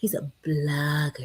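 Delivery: soft, sweet, gentle, hushed voice. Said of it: "soft, sweet voice when he says blogger".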